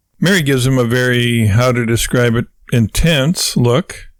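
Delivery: ordinary delivery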